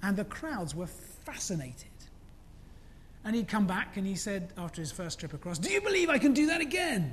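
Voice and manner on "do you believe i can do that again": put-on French accent, pitched up. Retelling a wire walker asking the crowd after his first crossing, in a french accent. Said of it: "With a French accent".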